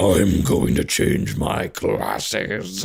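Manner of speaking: very low, creaky, rough transformed monster voice. Retelling a story about a boy whose eyes flash red, do a transformed monster voice. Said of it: "voice gets like super".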